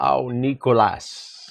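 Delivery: put-on German accent. Retelling what a man who built a property empire said to him, imitating a German accent. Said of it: "he spoke with his German accent".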